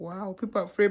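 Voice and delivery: ordinary talk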